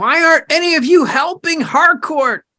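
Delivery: screaming frantically. Voicing a character screaming at the others for not helping: screaming in character. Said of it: "Pix is, like, screaming".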